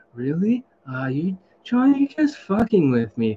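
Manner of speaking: most relaxed, easygoing, super chill, laid-back voice. Retelling what another man said to John: imitating a super chill voice. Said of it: "the most chillest voice in the world".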